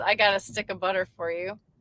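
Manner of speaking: ordinary talk, nothing marked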